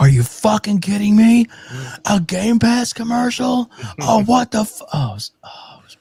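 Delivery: shrill, very high, loud furious outburst. Retelling how he reacted to a game pass commercial while apologizing, retelling a furious outburst. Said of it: "he loses his shit".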